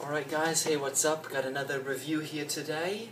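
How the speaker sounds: put-on British accent. Opening another review for viewers, in a put-on british accent. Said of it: "I don't know why I'm starting off with a British accent".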